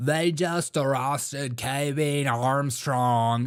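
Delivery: mock drawled odd accent, slow and stretched out.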